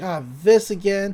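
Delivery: ordinary delivery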